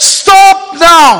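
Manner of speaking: high-pitched, loud shout. Retelling how a villager stopped a film screening: retelling a villager's shout. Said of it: "he shouts out to the crowd".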